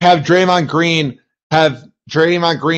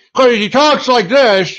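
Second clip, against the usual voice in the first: higher-pitched sports announcer voice, courtside style; 7 semitones higher than usual. Showing how a bizarre-sounding announcer talks, in a Mike Breen announcer voice. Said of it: "he's got a good announcer voice".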